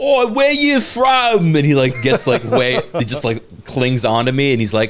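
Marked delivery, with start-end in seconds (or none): 0.0-1.6 very high, stretched, drawn-out chavvy drawl. Retelling a pub crawl, a stranger who heard the speaker's accent asks: imitating a chavvy dude. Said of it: "chavvy dude who was like stumbling".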